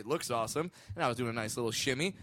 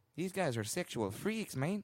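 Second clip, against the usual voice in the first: terrible, bad, put-on fake Mexican accent; 2 semitones higher, 5 dB quieter than usual. Retelling what the women were thinking as the guys walked up, terrible mexican accent. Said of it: "that was also a terrible Mexican accent".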